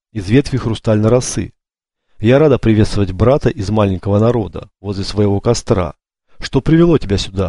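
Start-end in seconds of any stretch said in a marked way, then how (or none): none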